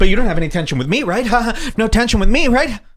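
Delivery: mocking put-on comedian voice. Mocking a comedian who was just shown on a clip: mocking a weak comedian. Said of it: "Oh, the weak comedian".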